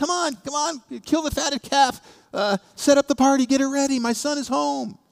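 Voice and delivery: mock overjoyed, excited fatherly exclaiming, pitched very high. Retelling the parable, voicing the father welcoming his son: acting out an excited father. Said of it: "He's so excited".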